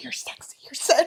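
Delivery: low, sultry, seductive murmured whisper. Imitating an author whispering sweet nothings into the ear: imitating someone whispering sweet nothings. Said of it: "she's like whispering sweet nothings into my ear".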